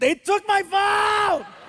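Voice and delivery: very high, slow, drawn-out shouting. Retelling how a son, refused his way, yelled at the ground: imitating a son yelling. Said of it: "he yells at the ground and he goes".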